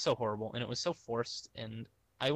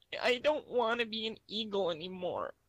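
put-on very high, childlike little-kid voice; 10 semitones higher than usual. Retelling a breakdown in front of parents, answering dad as a young self, kid voice. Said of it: "I know I'm doing a kid voice".

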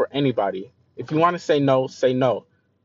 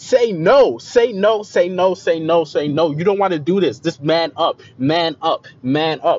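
screamed slowly, stretched out; 3 semitones higher, 4 dB louder than usual. Retelling screaming at oneself alone at the airport: imitating own past screaming. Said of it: "screaming at myself".

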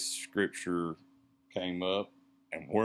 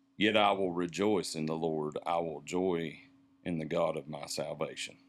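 ordinary talk, nothing marked

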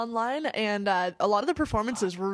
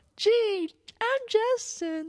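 mocking prissy little schoolgirl voice, higher pitch; 12 semitones higher than usual. Mocking a co-host's new nickname: mocking prissy schoolgirl voice. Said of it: "you sound like a prissy little schoolgirl".

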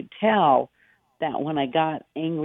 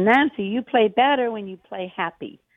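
put-on cute Spanish accent, pitched up; 7 semitones higher than usual. Nancy retells what the man who watched her play told her, imitating his very cute spanish accent. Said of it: "he said it in his very cute Spanish accent".

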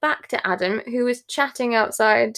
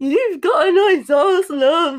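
loud, high voice, cracking as if breaking; 6 semitones higher, 5 dB louder than usual. Retelling what a man said to a friend dressed as the bunny, imitating a breaking voice. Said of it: "his voice is breaking".

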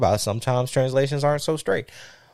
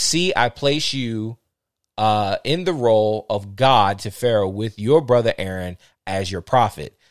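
normal talking voice

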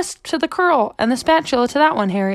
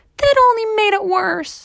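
high, whiny, grumbling, fed-up voice; 8 semitones higher than usual. Harriet reacts after another curl pops out of her braid; complaining. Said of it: "Harriet complained".

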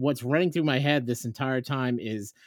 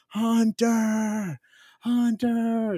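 mock shrill scream at the top of the lungs; 10 semitones higher than usual. A dad retells searching through Disney for a missing boy, retelling a scream. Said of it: "screaming at the top of my lungs".

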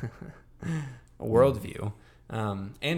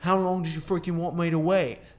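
bad, high-pitched put-on British accent; 7 semitones higher, 5 dB louder than usual. Retelling a show character's line after a breakup, in a put-on British accent. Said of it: "That's a great accent".

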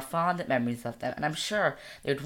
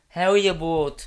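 Dublin northside accent; 8 dB louder than usual. Listing accents they can do, then showing one: north dublin accent. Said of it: "I can do North Dublin".

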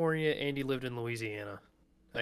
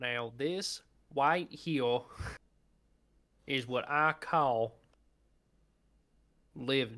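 put-on southern drawl with a lisp. Friends trading jokes in lisping southern accents, one adds a line, southern drawl with lisp. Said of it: "I appreciate the southern".

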